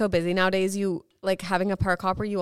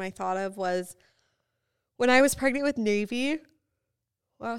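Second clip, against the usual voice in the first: mid-yawn, yawning while talking; 3 semitones higher than usual. Starting a story from a pregnancy on a podcast, yawning. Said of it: "sorry, yawning".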